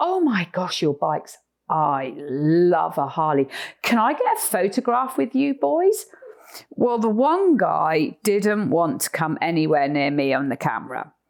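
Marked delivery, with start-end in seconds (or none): 0.0-6.0 sing-song, put-on attempt at a British accent. Retelling asking two men with Harleys for a photograph, in a best British accent. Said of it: "in my best British accent".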